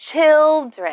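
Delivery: put-on children with stress on first syllable chil-. Teaching the plural of child: stress first syllable of children. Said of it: "we need to stress the first syllable".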